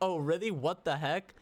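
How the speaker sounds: ordinary talk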